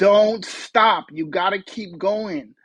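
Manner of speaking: acted-out urgent shouting, calling out hard. Retelling telling her to keep walking: imitating shouting at someone. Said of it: "shouting at her".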